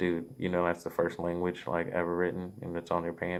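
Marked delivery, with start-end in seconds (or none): none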